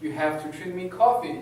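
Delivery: ordinary delivery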